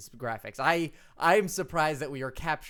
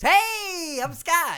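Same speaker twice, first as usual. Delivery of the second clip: very high, loud, cheery happy voice; 7 dB louder than usual. On the podcast, after your own sad voice, show the listeners by imitating Scott's happy voice. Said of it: "this is gonna be Scott's happy voice".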